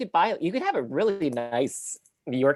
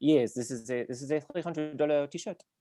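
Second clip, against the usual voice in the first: put-on French accent in a fashionista style; 4 dB quieter than usual. Imagining people at Fashion Week, the speaker does the line in a French accent. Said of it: "but it'll be a French accent".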